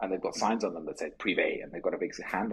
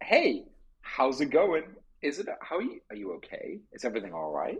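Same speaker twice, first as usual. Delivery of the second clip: high, swooping friendly-ghost voice; 6 semitones higher than usual. Acting out a pitch where a friendly ghost greets a guest: friendly ghost voice. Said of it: "there's a friendly ghost in the hallway".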